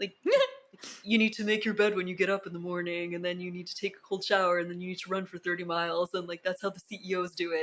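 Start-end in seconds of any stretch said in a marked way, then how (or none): 1.0-7.6 insistent, put-on bro voice. Mocking bros who insist on one must-do habit: bro voice. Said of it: "bro voice again".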